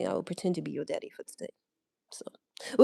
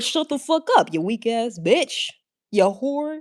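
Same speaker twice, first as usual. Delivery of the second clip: acted rude, cussing tone with a pitched-up voice; 5 semitones higher than usual. Retelling the way of talking to men, giving people hell: imitating own rude trash talk. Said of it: "'cause I be like".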